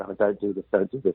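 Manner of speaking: mock, hard, imploring, pleading tone. Retelling begging a producer not to use a monkey: retelling own pleading. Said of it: "I begged us and pleaded".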